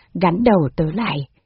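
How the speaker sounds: plain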